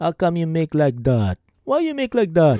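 put-on sing-song old grandfather voice. Speaker acts out scolding friends who make mistakes at work, like an old tata. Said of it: "Talking like this, like an old tata".

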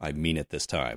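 totally serious, low, dead-serious, no-joking delivery. Retelling how the same character turns around immediately, imitating a totally serious line. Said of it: "totally seriously goes".

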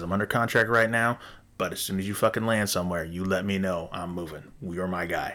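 normal talking voice

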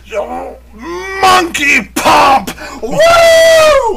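high, drawn-out, wild scream.

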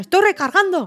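high, loud shouted callout. Describing players in a shooter game announcing reloads: imitating a shouted game line.

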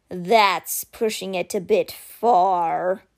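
grumbled. Simber responds to the speaker's plan, grumbling. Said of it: "Simber grumbled".

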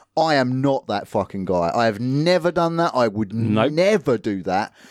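ordinary talk

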